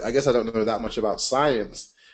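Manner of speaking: usual speaking voice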